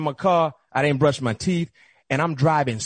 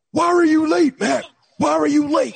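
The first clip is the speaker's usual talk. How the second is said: raspy, very high-pitched voice; 12 semitones higher, 4 dB louder than usual. Retelling the coach pressing him on why he was late: Bill Cowher raspy voice. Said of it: "he got that raspy voice".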